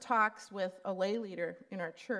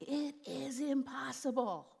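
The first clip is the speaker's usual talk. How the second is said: mock emphatic, hammering delivery; 5 semitones higher, 3 dB quieter than usual. Speaker retells what he screams at the speaker, retelling a scream. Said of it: "He screams at me".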